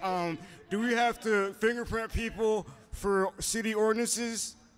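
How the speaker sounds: dim-witted police officer voice. Retelling what a man asked his comrade at the police station, dumb-sounding voice. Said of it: "Like an idiot. That's how he sounded to me".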